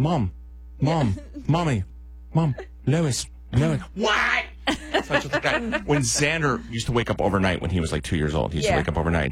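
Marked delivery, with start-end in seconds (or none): 0.0-3.8 put-on cartoon baby voice, much higher pitch. Joking about calling for mom, in a Stewie Griffin voice. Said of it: "It sounds like the Stewie Griffin".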